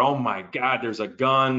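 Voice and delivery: mock screaming outcry, alarmed and panicked. Telling how someone at Walmart saw a gun, imitating a scream. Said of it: "sees this and screams out".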